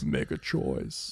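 hushed, breathy whisper with barely any voice. Asked to give his voice, attempting an Anton Chigurh voice. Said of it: "give me his voice".

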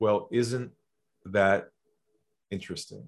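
low, calm, composed, centered voice. Retelling their reply to a man from another company, lowered voice. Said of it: "I lowered my voice".

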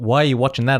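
ordinary talk

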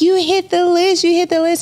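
acted, very high shrieking with excitement. Author retelling her friend's call about her book hitting the list: imitating a friend screaming.

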